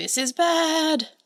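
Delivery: high, shrieking wail with bad drawn out. Retelling a scene where Ritsu is dragged along: imitating Ritsu screaming. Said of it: "he is just screaming".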